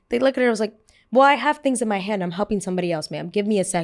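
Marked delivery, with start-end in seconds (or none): 1.1-3.8 passive-aggressive, polite surface with cutting undertone. Retelling a flight attendant's reply to a passenger: imitating passive aggressive tone. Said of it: "they do it very passive aggressively".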